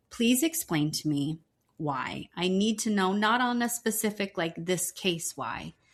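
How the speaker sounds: acted upset pleading. Retelling what the speaker said to the judge, retelling an upset plea. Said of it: "because I was so upset".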